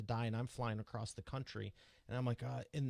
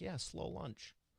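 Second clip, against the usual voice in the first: play-acted nonchalant, offhand, casual tone, pitched up; 6 semitones higher, 4 dB quieter than usual. Teasing the guest about rattling off big feats: imitating someone nonchalant. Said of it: "You're like".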